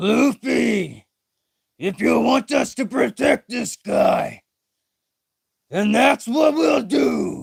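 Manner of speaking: rough, creaky put-on voice. Voicing a line to Luffy about protecting a guy, in a Jinbei voice. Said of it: "That's my Jinbei voice".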